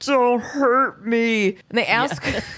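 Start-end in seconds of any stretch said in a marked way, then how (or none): 0.0-1.5 strange, weird, slowed-down slow-motion drawl. Recapping a show, speaker quotes Terry held at gunpoint, in Terry's weird slow-motion voice. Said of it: "he's got this weird slow motion voice".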